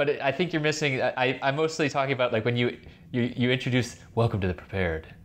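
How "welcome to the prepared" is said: put-on hushed whisper. Imitating the other speaker's show intro: imitating whispering in a church. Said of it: "like you're whispering, you're whispering someone, to someone in, like, a church".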